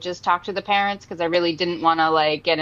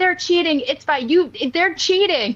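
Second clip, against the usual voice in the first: play-acted, very high, shrill yelling; 10 semitones higher than usual. Retelling what a mom yelled at an umpire's fair call: imitating a mom yelling. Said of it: "yelling at me".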